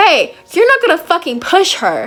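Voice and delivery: put-on mad, swooping, confrontational angry outburst. Retelling standing up for a friend being pushed around: mock-angry confrontation. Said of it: "I was getting mad".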